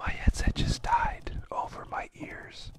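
slow, soft whisper. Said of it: "are you whispering".

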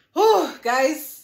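loud, belted vlog intro voice. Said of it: "Let me try one".

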